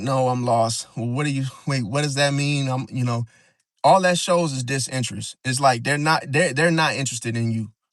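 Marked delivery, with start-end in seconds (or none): none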